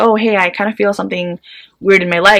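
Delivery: ordinary delivery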